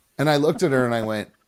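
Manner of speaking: plain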